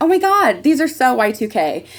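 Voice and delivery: high, excited, earnest gush. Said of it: "I very earnestly went".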